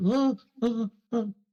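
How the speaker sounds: very high, squeaky whimpers through closed lips. Retelling how Josh reacted when told to speak, imitating his mouth-shut whimper. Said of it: "he just kind of like whimpers with his mouth shut".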